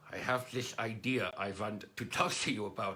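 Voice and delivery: put-on German accent. Telling a joke, the dachshund speaks to the Pomeranian in a German accent. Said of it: "in his uh, German accent".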